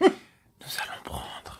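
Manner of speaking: asmr-style whisper. Opening card boosters for viewers, whispering. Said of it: "Pourquoi tu chuchotes ?".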